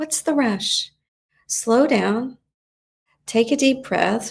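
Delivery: soft, gentle, calming, soothing inner voice. Voicing the gentler inner voice for someone feeling anxious, gentle soothing voice. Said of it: "that gentler voice say".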